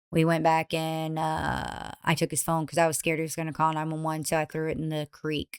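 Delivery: blunt, uncaring, flat, quiet deadpan monotone. Speaker retells how a woman told her story: mimicking her flat monotone. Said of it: "the way that she's telling this story is just like monotone".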